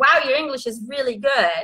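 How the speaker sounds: ordinary talk, nothing marked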